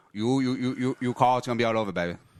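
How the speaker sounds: put-on taunting tone in a Vietnamese accent. Showing whom the voice is really based on, a Vietnamese poker player, Scotty Nguyen impression. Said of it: "It's basically just an impression of Scotty Nguyen, the Vietnamese poker player".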